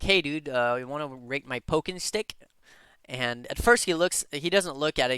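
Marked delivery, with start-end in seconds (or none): 0.0-2.3 heavily sarcastic tone. Retelling asking a streamer to rate a weapon: retelling own sarcastic line. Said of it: "in a really sarcastic manner".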